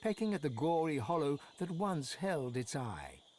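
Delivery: ordinary delivery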